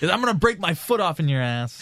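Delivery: condescending, stern, high-pitched, menacing sitcom-dad voice. Speaker describes a condescending dad character, doing a Red Foreman impression. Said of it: "Is he like Red Foreman".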